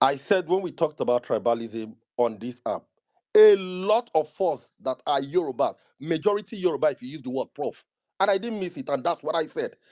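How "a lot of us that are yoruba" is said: slow, deliberate, spelled out letter by letter. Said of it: "let me say it slowly".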